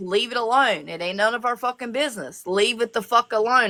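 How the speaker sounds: ordinary talk, nothing marked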